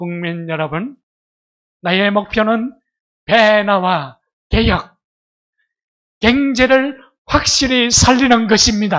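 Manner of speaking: put-on booming, very loud speech in thick Gyeongsang accent. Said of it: "대단한 경상도 어, 발음, 본토의 발음이었죠".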